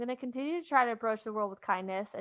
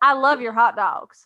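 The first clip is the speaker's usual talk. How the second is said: put-on Southern US accent, louder; 10 dB louder than usual. Redoing a line from a school play role: southern accent. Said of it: "played someone in the South and had to pick up an accent".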